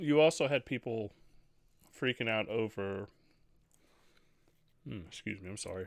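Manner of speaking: speaking with mouth full while eating. Talking about gaming news on the podcast, eating while talking. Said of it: "I'm trying to eat and do the podcast".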